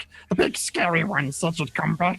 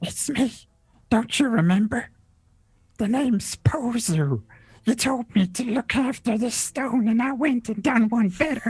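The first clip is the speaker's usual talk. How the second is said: whispered, pitched higher; 6 semitones higher than usual. Voicing a character told to whisper it into a player's ear: whispering. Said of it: "You whisper it into my ear".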